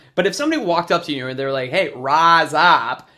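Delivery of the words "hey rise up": raised Southern accent with wide open, spread vowels. Showing how someone from the South might say it, Forrest Gump Southern vowels. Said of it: "that's maybe something that you would hear in the South".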